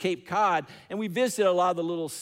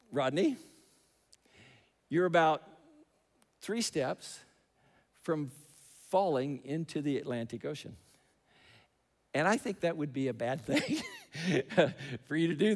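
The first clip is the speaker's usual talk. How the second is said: very, very calm, quiet, soft voice; 5 dB quieter than usual. Speaker quoting his dad's words in that moment: imitating dad's very calm voice. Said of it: "My dad says in a very, very calm voice".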